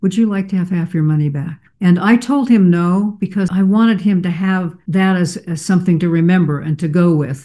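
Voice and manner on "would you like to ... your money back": play-acted, sudden, fast, all gentleness, kindest voice. Retelling a tense exchange, the speaker imitates a man replying in the kindest voice. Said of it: "in the kindest voice said".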